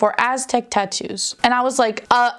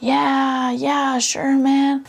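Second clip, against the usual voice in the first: drawn-out, very slow speech; 3 semitones higher than usual. Retelling how a tattoo artist answered, imitating slow talker. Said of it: "He's talking a little slow".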